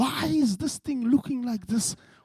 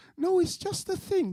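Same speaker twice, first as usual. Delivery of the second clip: lovely, sweet, high motherly voice; 8 semitones higher, 4 dB quieter than usual. Retelling a mother answering her curious boy: imitating a mother's beautiful voice. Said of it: "She's in the most beautiful voice".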